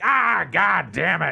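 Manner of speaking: put-on very loud, very slow, creaky, cranky old-man cursing. Retelling spilling hot coffee, imitating a grumpy old man. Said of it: "fucking old man".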